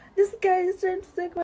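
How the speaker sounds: high, loud, rushed, rattled-off screaming. Speaker retells someone grabbing the bag in a crowd, retelling a scream. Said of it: "I was screaming".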